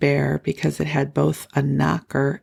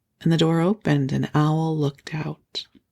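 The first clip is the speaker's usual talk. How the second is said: ordinary delivery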